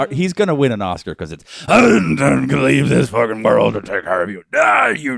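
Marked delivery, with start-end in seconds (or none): 1.7-5.2 loud, gravelly rumbling voice pushed out. Mocking a gravelly movie scene: gravelly Sam Elliott voice. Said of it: "there's just a gravel off".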